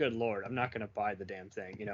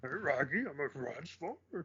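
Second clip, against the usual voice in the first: put-on cartoon dog voice, higher; 5 semitones higher than usual. Retelling how he greets a Transformers fan friend: Scooby-Doo voice. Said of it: "in Scooby's voice and calling him a Transformer".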